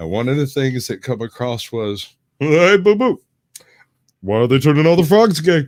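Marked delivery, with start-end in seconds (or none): 2.4-5.7 loud, high cartoon bear voice. Showing a random phrase he says absentmindedly, in a Yogi Bear voice. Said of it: "saying random phrases in Yogi Bear voice".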